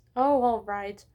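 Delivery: plain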